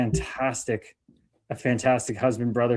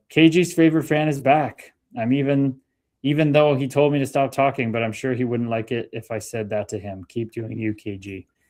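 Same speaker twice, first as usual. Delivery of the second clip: normal talking voice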